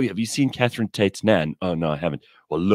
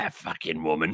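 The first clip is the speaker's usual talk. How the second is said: put-on proper East London Cockney accent, old-sounding voice; 2 semitones lower, 8 dB quieter than usual. Retelling a comedy sketch, quoting the old lady: Catherine Tate's nan voice. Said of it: "a proper sort of East London Cockney old".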